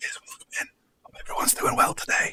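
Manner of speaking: soft whisper close to the mic. Retelling own past stream intro while someone sleeps upstairs: imitating own past whisper. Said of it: "why are you whispering to the microphone?".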